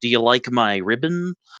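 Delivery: mock nonchalant, breezy, casual offhand tone. Retelling a game character's line after she blames a curse: imitating a nonchalant tone. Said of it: "and then real nonchalantly".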